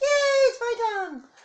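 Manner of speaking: very high, squeaky, drawn-out cat voice. Imagining what the cat will say when she hears them: voicing the cat. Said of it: "she'll be like".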